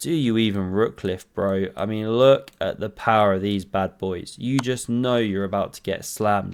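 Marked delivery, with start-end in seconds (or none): 0.0-1.7 mock, pretend whisper. Commenting on a chess game, voicing a player's taunt: mock whisper. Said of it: "and Gary whispers".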